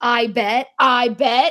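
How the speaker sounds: put-on vampire screaming voice. Describing a Halloween costume from a trailer scene: Lestat screaming. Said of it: "when he screams".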